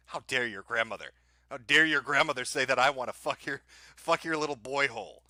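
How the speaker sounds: put-on angry outburst. Acting out another speaker's reply to a grandmother's claim: imitating an angry outburst. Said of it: "Did you hear how angry he got?".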